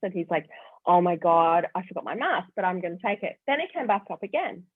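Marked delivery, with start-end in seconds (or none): 0.9-3.4 imitated flustered tone. Retelling a husband's words after he forgot his mask: imitating someone flustered. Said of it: "He was really flustered".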